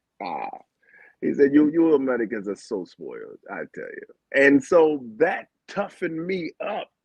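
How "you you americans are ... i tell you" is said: put-on Jamaican-accented firm delivery. Retelling what another man told him, the speaker uses a Jamaican accent. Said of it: "that's my Jamaican accent".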